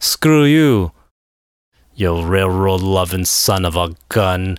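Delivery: put-on Russian accent. Reading an email, the speaker imagines a character saying it: Yelena Belova Russian accent. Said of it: "I have to do the accent".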